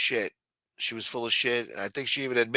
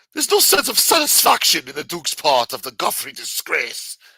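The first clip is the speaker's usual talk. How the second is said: loud, swooping put-on British accent; 5 semitones higher, 8 dB louder than usual. Rereading the same line, now in a put-on british accent. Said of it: "that means they said that in a British accent".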